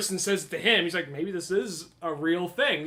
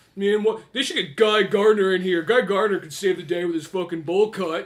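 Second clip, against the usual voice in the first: put-on sulky nineties teen voice, louder; 6 dB louder than usual. Acting out a comic's kid heading home: imitating a shitty nineties kid. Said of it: "kid's sitting there cross-armed".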